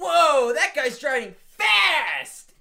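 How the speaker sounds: put-on very high, very slow, drawn-out drunken holler. Retelling a phone call from Aaron, imitating Aaron shouting. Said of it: "he just shouts".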